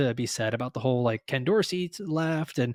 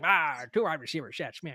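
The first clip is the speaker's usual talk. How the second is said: put-on elderly old man voice; 5 dB quieter than usual. Discussing his next faller pick among wide receivers, in an old man voice. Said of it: "old man voice is great".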